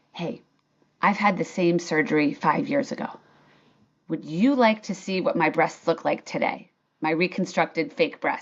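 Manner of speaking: low, hushed half-whisper, like an aside. Recounting a new employee pulling the speaker aside after a meeting, retelling a half-whisper. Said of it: "and she whispers".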